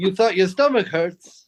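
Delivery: put-on Vietnamese accent. Joking about a hospital stay in Vietnam, imitating a Vietnamese hospital worker. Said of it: "were you doing a racist impression".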